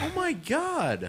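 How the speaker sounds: astonished, very high, with long drawn-out God. Learning that the others have heard the speaker's music: surprised. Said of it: "why are you sound so surprised?".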